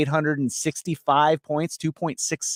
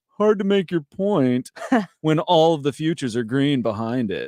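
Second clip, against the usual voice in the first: play-acted smug, self-satisfied know-it-all tone. Quoting people commenting on a video thumbnail: mock-smug voice. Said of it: "smug smug voice".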